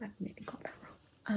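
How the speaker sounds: quiet whispered voice.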